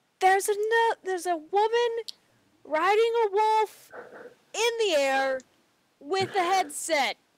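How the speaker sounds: high-pitched yelling at the top of the lungs. Warning the party about a woman riding a wolf in the air: yelling as loud as possible. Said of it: "I'm going to yell as loud as I possibly can".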